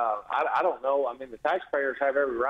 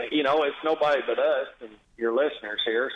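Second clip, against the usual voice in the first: ordinary delivery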